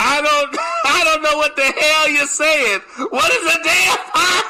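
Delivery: frustrated screaming outburst, reined in. Speaker retelling yelling into a little order speaker, retelling a scream. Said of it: "I screamed in the little speaker".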